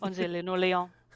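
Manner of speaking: put-on French accent. Talking about a kitty after being asked to: put-on French accent. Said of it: "she will do it in a French accent".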